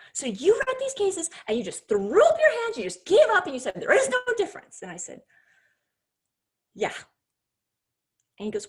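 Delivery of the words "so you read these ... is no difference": high-pitched, screaming rant. Quoting a man who screamed back at the speaker's answer: retelling a scream. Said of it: "And he's screaming".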